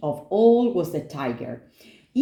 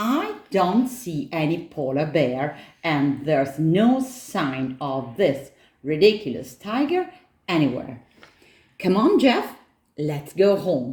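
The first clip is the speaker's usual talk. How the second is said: plain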